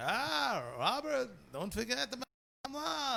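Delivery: put-on very slow, drawn-out Yiddish-inflected accent.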